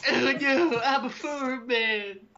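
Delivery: high, slow, teasing caricature voice. Imitating another speaker after a movie-trailer bit, mocking his voice. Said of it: "Is that supposed to be my voice?".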